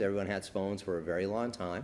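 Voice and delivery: ordinary talk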